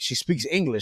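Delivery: normal talking voice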